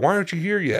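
put-on high yelling. Retelling how the manager at work would yell: imitating a manager yelling. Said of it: "start, like, yelling at me".

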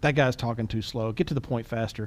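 usual speaking voice

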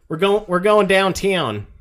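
slightly overdone Southern Texas accent, drawled. Comparing Midwest and local pronunciation, showing how people here say it: exaggerated Texan accent. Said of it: "I exaggerated a little bit".

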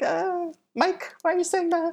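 put-on very high, soft, tiny little kid voice. Recalling being six and hearing his name said wrong, in his little mini-me voice. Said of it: "In the little mini me voice".

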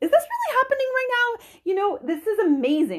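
very high-pitched, loud, animated sing-song exclaiming. Recalling a moment she calls amazing: high-pitched voice. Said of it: "my high pitched, sorry, I'm really efforting not to high pitch".

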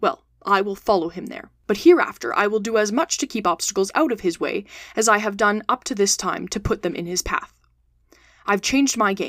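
ordinary delivery

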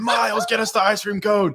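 very high, drawn-out screaming. Telling a story, the speaker acts out a boss yelling at a worker: retelling a boss screaming. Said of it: "She's screaming".

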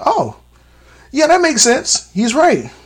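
high, impressed and convinced tone. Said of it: "and I'm like".

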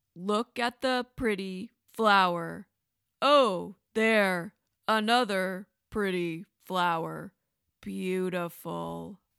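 very slow, dazed, sleepwalker-like voice. Narrator reading Wyatt's line as he speaks under a spell, speaking very slowly. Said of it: "He spoke very slowly".

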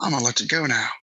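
put-on Southern accent, shiningly polite. Picking out some southern phrases to say, put-on southern accent. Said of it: "I guess I got to talk Southern".

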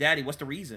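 normal talking voice

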